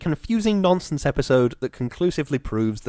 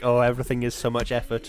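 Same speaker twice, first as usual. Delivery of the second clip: ordinary talk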